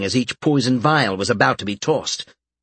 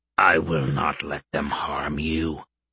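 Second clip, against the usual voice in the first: rough gravelly voice, very low and soft; 8 semitones lower, 5 dB quieter than usual. Narrator reads the destroyer Tiny speaking to Fluffball: gravelly voice. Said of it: "Tiny told her in a gravelly voice".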